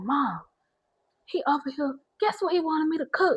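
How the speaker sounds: soft, hushed half-whisper. Retelling talking to mom from the kitchen while he sits on the couch, retelling a half-whisper. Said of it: "I'm whispering though".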